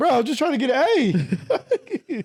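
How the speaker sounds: high, wide voice, laughing through the words.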